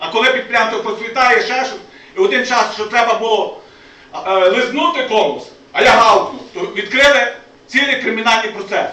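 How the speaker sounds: loud emotional speaking.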